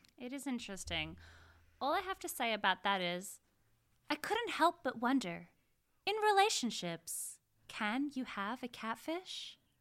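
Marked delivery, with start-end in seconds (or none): 4.1-9.6 high, swooping sing-song tune. Musing on catfishing in relationships as a Carrie Bradshaw impression. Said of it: "that's my Carrie Bradshaw impression".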